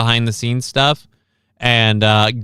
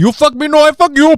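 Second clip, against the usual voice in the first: put-on Indian accent, higher and louder; 5 dB louder than usual. Acting a gunfight line from the imagined Bollywood-voiced game: put-on Indian accent. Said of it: "again, the voice actors".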